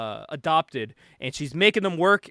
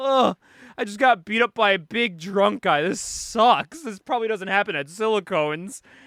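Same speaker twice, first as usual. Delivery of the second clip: put-on blubbering, weepy, tearful voice through sobs; 4 semitones higher than usual. Retelling a scene, voicing the owner after he got beaten up, imitating someone crying.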